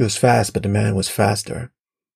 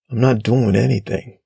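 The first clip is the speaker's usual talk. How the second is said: ordinary delivery, nothing marked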